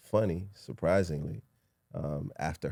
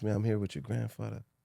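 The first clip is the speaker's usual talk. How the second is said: put-on Jamaican accent, pitched much higher; 4 semitones higher than usual. Retelling a phone call from a man claiming to be their father, in a Jamaican accent. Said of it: "with an accent, Jamaican accent".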